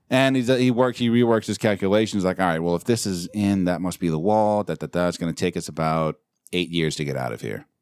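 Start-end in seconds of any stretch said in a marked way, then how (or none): none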